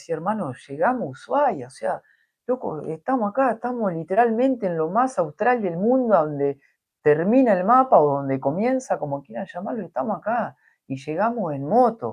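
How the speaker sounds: high, tearful, overwhelmed emotional outpouring. Retelling what was said to a companion after both reached ushuaia by motorbike: retelling tearful words. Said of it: "y estábamos los dos llorando".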